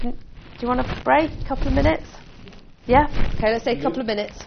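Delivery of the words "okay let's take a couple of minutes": speaking a little fast. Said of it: "Sorry that I'm speaking a little bit fast".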